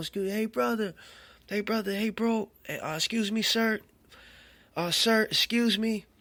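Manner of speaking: loud, high hollering. Retelling calling across a road to a man pushing a buggy: imitating own yelling. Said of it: "I'm yelling".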